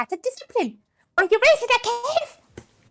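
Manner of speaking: put-on female character voice. Speaker acts out a character's lines, in female Rolf voice. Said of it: "You've actually got the pitch for it".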